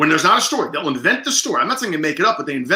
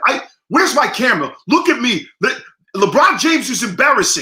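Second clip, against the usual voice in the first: acted-out, high-pitched, shouty hollering rant; 6 semitones higher, 3 dB louder than usual. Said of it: "they do the yelling fight thing".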